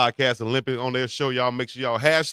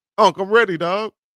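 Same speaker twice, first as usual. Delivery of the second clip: eager, excited, pitched-up voice; 7 semitones higher, 5 dB louder than usual. Declaring readiness for the podcast Olympics: excited. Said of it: "You sound excited".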